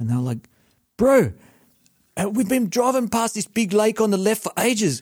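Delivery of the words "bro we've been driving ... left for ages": bad put-on New Zealand accent. Retelling a phone call while driving to Newcastle, bad New Zealand accent as Liam. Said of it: "this is a really bad New Zealand accent as well. Sounds more South African".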